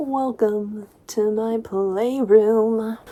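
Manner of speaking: unhurried, slow, deliberate, drawn-out delivery. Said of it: "he's like".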